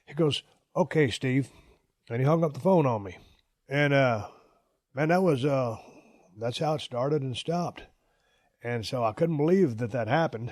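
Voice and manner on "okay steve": put-on smart-ass tone. Retelling a phone call about unpaid wages: imitating Chris's smart-ass tone. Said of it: "a smart-ass tone with me".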